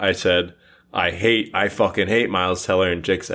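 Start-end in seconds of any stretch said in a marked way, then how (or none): none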